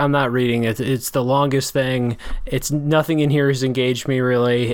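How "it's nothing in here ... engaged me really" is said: ordinary talk, nothing marked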